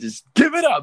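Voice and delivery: high, loud, exasperated yelling.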